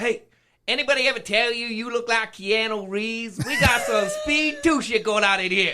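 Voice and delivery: put-on rural American country twang. Retelling what a man said to him on the street, imitating a country accent. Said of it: "It's a little country".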